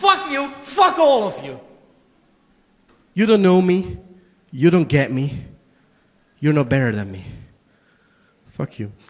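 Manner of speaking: raw emotional outburst with swooping pitch. Delivering a monologue to an audience, breaking into an emotional outburst. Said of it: "Sorry, I got a bit emotional".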